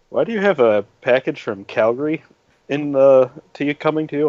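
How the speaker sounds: ordinary delivery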